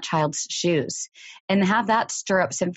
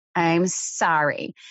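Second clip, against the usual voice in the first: put-on nasty voice and tone. Retelling a child's forced apology to a playmate: imitating a nasty voice. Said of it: "in kind of a nasty voice".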